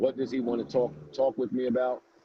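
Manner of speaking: ordinary talk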